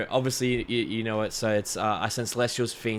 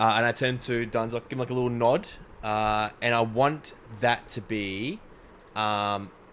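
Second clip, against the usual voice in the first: ordinary talk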